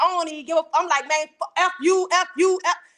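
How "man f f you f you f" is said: put-on slow, rude, fed-up angry cursing. Retelling talking to people any kind of way: retelling own rude angry outburst. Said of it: "I'm talking to people any kind of way".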